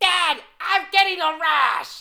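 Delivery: horrible put-on voice, very high, shrill, loud, drawn out. Joking about a comedy casting, doing a horrible Gilbert Gottfried impression. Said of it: "That was a horrible Gilbert Godfrey".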